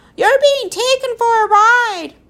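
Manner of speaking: very loud, very high bird-like screech. Narrator reads the bird's reply after the professor shouts at her, shrieking. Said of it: "She shrieked".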